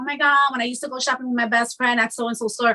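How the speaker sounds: ordinary delivery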